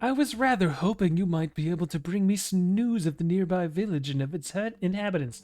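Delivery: wistful, sighing, longing mermaid character voice. Reading a script aloud and voicing the mermaid's line: wistful mermaid voice. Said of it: "Wistfully, the mermaid sighs".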